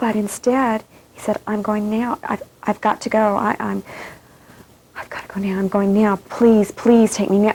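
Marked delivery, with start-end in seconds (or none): 1.5-7.5 put-on anxious, fervent, desperate tone. Retelling a dying person's words at the bedside: imitating an anxious, fervent plea. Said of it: "so anxious and with such a fervor".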